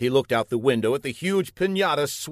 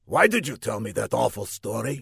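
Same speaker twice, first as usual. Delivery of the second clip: plain reading voice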